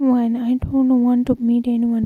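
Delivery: ordinary delivery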